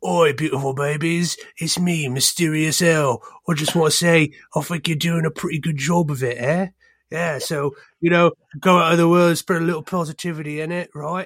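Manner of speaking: awful put-on accent in a soft ASMR style. Performing after a listener asks for accented asmr: terrible put-on accented asmr voice. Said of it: "really terrible, like, awful".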